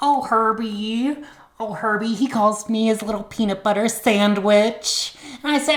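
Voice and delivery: put-on Midwest accent. Performer voicing Julie recalling nights at the soda fountain with Herbie, Julie in a Midwest accent. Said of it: "I will be doing Julie in a Midwest accent".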